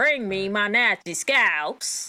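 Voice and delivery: failed Tennessee accent attempt. Recalling a man's tennessee accent, the speaker attempts an imitation of it. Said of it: "this Tennessee accent that he was doing".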